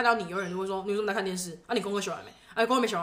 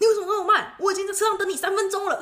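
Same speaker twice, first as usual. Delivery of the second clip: mock very high, shrill, loud furious yelling; 12 semitones higher, 6 dB louder than usual. Retelling how he scolded her from the car after class, imitating angry yelling. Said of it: "开门他就破破口大骂说".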